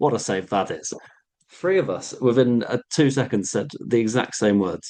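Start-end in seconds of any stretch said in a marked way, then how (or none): none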